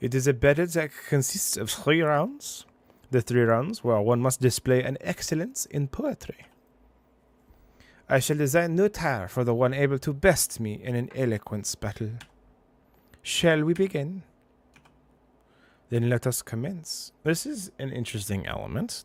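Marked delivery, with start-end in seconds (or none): 0.0-17.1 loud, fake French fashion-designer accent. Voicing a game character in a beret: put-on French accent. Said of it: "We're sending with the French accent".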